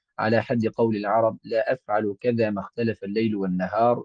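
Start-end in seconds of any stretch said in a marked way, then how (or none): none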